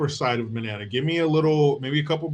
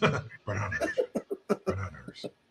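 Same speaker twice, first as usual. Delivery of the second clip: breathy, near-whispered single word, barely voiced; 8 semitones lower, 10 dB quieter than usual. Repeating a one-word bit from the talk: Liam Neeson impression. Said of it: "do Liam Neeson saying bananas".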